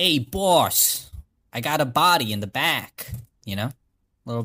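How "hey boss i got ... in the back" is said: loud, very slow New Jersey Italian mobster accent. Asked to make the case for the accent, the speaker tries a new jersey italian accent. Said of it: "it's New Jersey Italian is what we were all doing".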